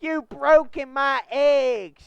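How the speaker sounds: put-on loud, high, hollered Southern accent. Acting out a line from a Thomas episode: Southern accent. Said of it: "we make good Southern accents".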